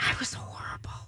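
very hushed, barely voiced whisper. Chatting with co-hosts about last night: whispering. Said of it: "Why are you whispering it".

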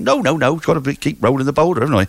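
put-on rural West Country accent. Playing someone who rolls a boulder, answering a question about the pub, put-on West Country accent. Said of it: "I don't know why I adopted a West Country accent for that".

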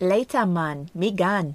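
terrible, bad put-on Jamaican accent. Host signs off to listeners at the episode's end in a bad Jamaican accent. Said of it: "Worst Jamaican accent ever".

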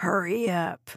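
snarling. Narrator reads a character's line to her on the staircase, snarled. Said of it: "Chuck snarled".

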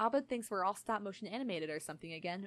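ordinary delivery

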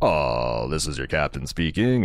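laconic, low, slow Texan drawl.

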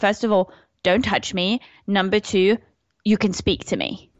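plain

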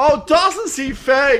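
high, slow, mock woman's yell in German.

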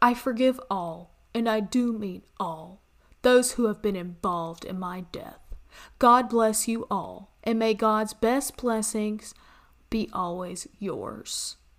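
mocking put-on smug, douchey tone. Reading a killer's final statement aloud in a mocking put-on douchey tone. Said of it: "I said that in a tone which was just, ugh".

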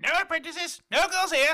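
very loud, very high, shrill character voice shout. Retelling a man refusing officials at his door, in a James impression. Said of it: "I actually kind of agree with your James impression".

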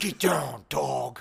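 gritty, rough, creaky caped-hero voice. Acting out a fantasy where he talks to you in the Batman voice. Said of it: "talk to you in the Batman voice".

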